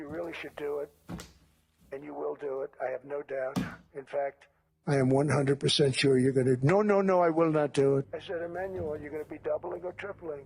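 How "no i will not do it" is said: put-on speech in a French accent. Retelling a talk with Emmanuel, speaker voices his refusal, imitating Emmanuel, French accent. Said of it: "was that an accent?".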